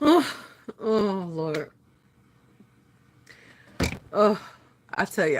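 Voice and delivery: breathless from laughing. Speaking while laughing too hard to breathe: breathless from laughing. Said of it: "I can't even breathe good".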